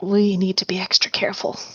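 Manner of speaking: confiding, secretive, private tone. Leaning closer to Dave in character, very quiet voice. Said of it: "just very quietly say".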